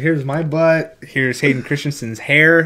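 ordinary talk

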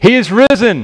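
high, full-throated, joyful proclaiming shout with gusto. Leading a call and response for families at home: shouting with gusto. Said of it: "shout it out like you mean it".

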